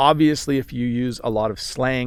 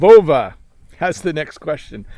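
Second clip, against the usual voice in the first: loud, raised yell straight into the microphone; 3 semitones higher, 6 dB louder than usual. Reading out the next viewer's question, yelling into the microphone. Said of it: "did I just yell in the microphone?".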